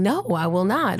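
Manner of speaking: normal talking voice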